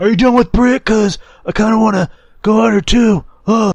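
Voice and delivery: put-on, throat-straining, very high voice. Imitating a man the others discuss: throat-straining impression voice. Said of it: "That hurts trying to do that voice".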